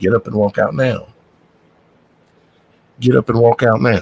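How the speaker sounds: firm, insistent voice repeating the words. Retelling the voice heard in his ear at a restaurant, soft, quiet, firm. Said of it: "that soft, quiet voice, but it was a little bit more firm".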